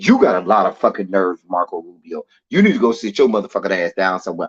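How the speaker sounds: furious, angry voice. Addressing a politician directly mid-rant, then apologizing for the mood: angry. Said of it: "shit like that pisses me off".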